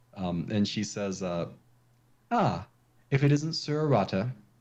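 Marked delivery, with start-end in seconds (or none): 2.3-4.4 high, imperious, lofty noblewoman voice. Game master voicing Lady Nariba greeting the player's character, imperious. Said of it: "she looks down at you uh, imperiously".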